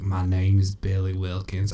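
soft, put-on old man voice. Describing a tape where a little girl sounds like an old man: imitating an old man's voice. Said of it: "the little girl sounds like an old man".

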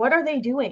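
ordinary delivery

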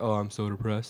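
jokey, soft, put-on depressed tone. Showing how people joke about it: comically fake depressed. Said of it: "if you're doing it comically".

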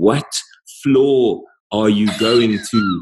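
slow, every word carefully overpronounced, condescending. Retelling what a lady in a hospital lift asked him in his wheelchair, imitating slow, loud overpronouncing. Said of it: "really, really slow and overpronounced and loud".

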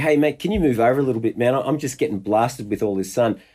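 plain

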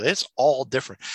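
ordinary delivery

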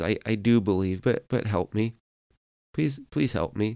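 hasty, quick, rushed, rattled-off delivery. Retelling the father answering Jesus, imitating a fast reply. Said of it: "the man comes back very fast".

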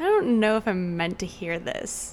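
ordinary talk

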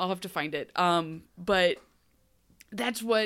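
ordinary talk, nothing marked

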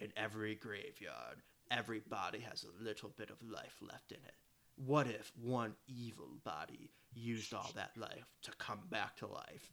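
low, hushed, spooky movie-trailer narration voice. Recalling a movie trailer that scared them as a child, imitating a creepy trailer voice. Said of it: "a creepy voice saying".

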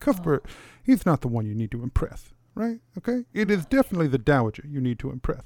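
voice brought down, low and hushed. Speaker voicing a character now inside the palace, in a lowered voice. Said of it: "he lowers his voice".

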